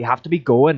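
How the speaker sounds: plain reading voice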